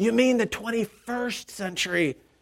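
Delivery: loud stage whisper. Search committee chair on the front pew to the new pastor, in a loud whisper. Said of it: "whispered in a loud voice".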